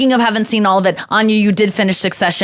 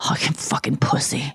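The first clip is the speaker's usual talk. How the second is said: soft, muttered under the breath. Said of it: "Like, under his breath".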